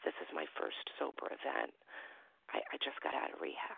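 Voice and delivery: put-on whispering. Retelling what a young guy at an event said to them, retelling a whispered aside. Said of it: "he whispers under his breath".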